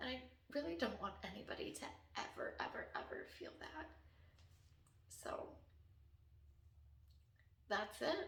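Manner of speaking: overcome, emotional, breathy and hushed near-whisper. Speaking about people in a painful situation, emotional. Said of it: "I'm so emotional".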